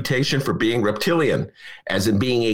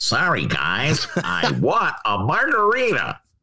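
swooping, animated put-on voice with wide pitch swings. Doing a bit about a senator flying to Cancun: Ted Cruz impression. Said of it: "That's my Teddy Cruz invitation".

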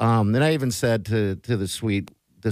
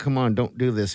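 normal talking voice

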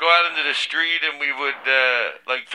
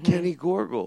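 gentle put-on child voice, quieter; 3 semitones higher, 4 dB quieter than usual. Replaying another speaker's impression of Kenny as a ten-year-old: gentle voice imitating Kenny. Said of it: "You were gentle".

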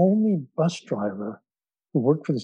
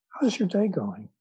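warm, caring, genuinely interested tone; 5 semitones higher than usual. Retelling how a bus driver greeted a passenger: imitating a warm, caring greeting. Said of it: "in a way that's very present, very warm".

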